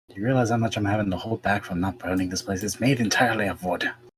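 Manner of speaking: hushed whisper. Talking with companions where they could be overheard, a character speaks whispering. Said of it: "why do you think I'm whispering?".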